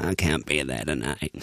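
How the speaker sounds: very low, feeble put-on sick voice. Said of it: "like when [name] did that sick voice once".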